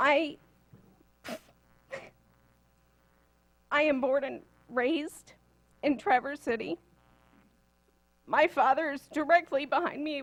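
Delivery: crying while speaking. Speaking in public with father behind, crying while speaking. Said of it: "which is probably why I'm crying".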